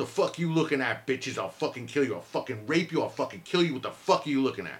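commanding menacing tirade. Retelling a threatening stranger on a street corner, retelling a loud authoritative voice. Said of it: "in a loud voice, like a authoritative voice".

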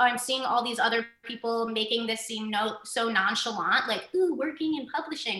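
ordinary talk, nothing marked

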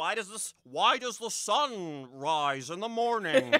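loud, slow delivery with "sun" drawn out. Retelling a movie scene, doing the mentor's answer: imitating Sanchez. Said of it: "Very good impression".

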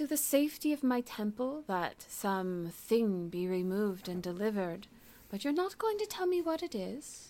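suspicious, wary, openly mistrustful tone. Role-playing a character answering another character, openly mistrustful.

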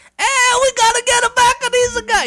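put-on high, comic French or Italian accent. Pitching a comic-relief character for a story, voicing him in a French or Italian accent. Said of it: "a character with a French or an Italian accent".

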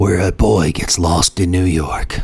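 deep big-screen movie trailer announcer narration. Speaker tries the trailer narration before the original plays, Don LaFontaine trailer voice. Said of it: "He does a lot better than you do".

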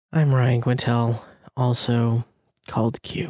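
glum, low-spirited, sad, downcast voice. Introducing themselves as a podcast host: sad voice. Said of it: "You sound sad".

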